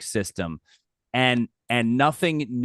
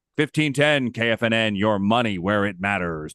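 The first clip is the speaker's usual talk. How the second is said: radio announcer voice, on-air delivery. Recalling his old financial radio show, he repeats the station ID: radio announcer voice. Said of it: "you like my radio voice?".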